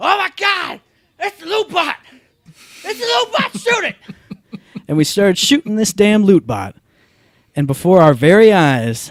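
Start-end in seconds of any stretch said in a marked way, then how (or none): 0.0-4.0 put-on very high, thrilled, excited scream. Retelling a little bot coming out of the ammo boxes, retelling screaming out. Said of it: "And I screamed out".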